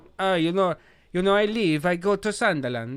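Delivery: cartoon Italian accent. Recalling Paolo leaving the club, the speaker quotes him in a racist accent. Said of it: "That's a racist accent".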